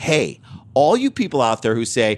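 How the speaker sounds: ordinary delivery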